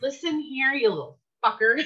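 playfully aggressive, teasing put-on tough-guy voice. A parent reenacting how they tease the children's dad, playfully mock-aggressive. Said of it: "I like to be playfully aggressive".

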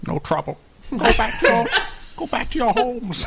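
put-on weird squirrel accent. Playing a squirrel answering a pest control phone line, weird squirrel accent. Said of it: "what a weird squirrel accent".

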